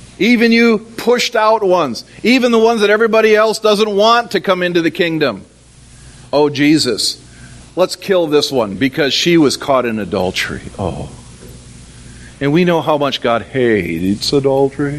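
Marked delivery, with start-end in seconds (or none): 6.3-15.0 deep, low, solemn voice. Retelling the story of the woman caught in adultery, speaker voices the accusers in a deep religious voice. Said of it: "You can hear the deep religious voice".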